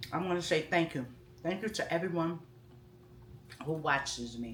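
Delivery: muffled speech through a mouthful of food. Ending a vlog while still eating, talking with mouth full. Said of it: "that's why you shouldn't talk with food in your mouth".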